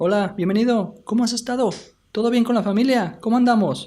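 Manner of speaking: high-pitched dentist voice, rattled off, pitch way up. Voicing a dentist welcoming a patient: high-pitched dentist voice. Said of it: "a fast paced and high pitched voice".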